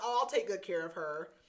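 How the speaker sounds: ordinary talk, nothing marked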